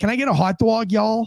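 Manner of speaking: Yankee accent crossed with Florida accent. Showing how people in Florida blend accents, Florida-Yankee hybrid accent. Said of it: "you'll hear something that sounds like this".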